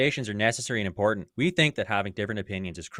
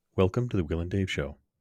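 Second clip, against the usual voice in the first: smooth, sultry radio-host delivery; 2 semitones lower than usual. Co-hosts start their show intro in a sultry radio voice. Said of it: "the sultry radio voice".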